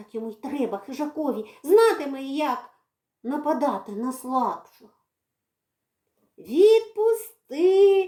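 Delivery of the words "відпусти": shrill, loud hollering yell. A captured character yells at the one holding him: yelling. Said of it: "репетував Редька".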